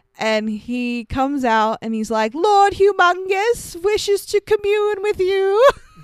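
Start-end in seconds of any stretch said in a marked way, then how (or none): 2.3-5.6 very high, silly, flowery, ornate announcer voice. Describing an announcer who comes out of the compound, imitating a flowery town crier. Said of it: "He just speaks so, like, flowery and, like, silly".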